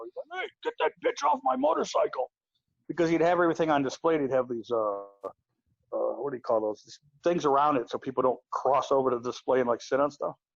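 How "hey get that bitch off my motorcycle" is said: high, rough squawking voice. Telling a story about a man, the speaker acts out him retelling a yell. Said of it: "he started yelling at some woman".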